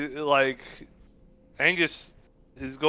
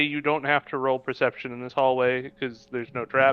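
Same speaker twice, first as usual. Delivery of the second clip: plain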